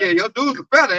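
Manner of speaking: ordinary talk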